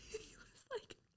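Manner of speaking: high, near-silent wheezing laugh, voice breaking.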